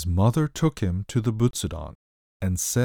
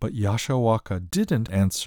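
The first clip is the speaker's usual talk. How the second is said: usual speaking voice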